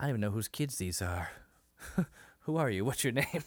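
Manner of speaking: put-on actor voice with a slow drawl. Retelling a comedy spoof of a car commercial: Matthew McConaughey voice. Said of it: "Jim Carrey was doing the Matthew McConaughey impression".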